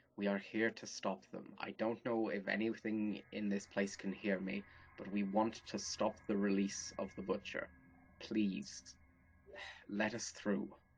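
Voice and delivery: quiet whisper under the breath. Speaking in character to whatever may hear, whispering under breath. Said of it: "sort of whispering under my breath".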